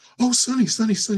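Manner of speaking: thrilled, very high, loud excited gushing. Retelling a phone call, imitating how a woman answered him, excited gushing. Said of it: "She'd get all excited and stuff".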